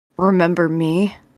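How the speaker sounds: intimidating, menacing, threatening delivery. Playing your character in a tabletop game after a superhero landing pose, menacing. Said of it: "and then I say menacingly".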